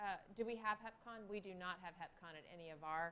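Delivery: speaking too quietly.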